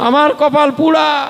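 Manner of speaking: high, tearful, crying lament.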